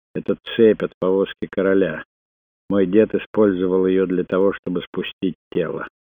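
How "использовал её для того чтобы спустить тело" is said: ordinary delivery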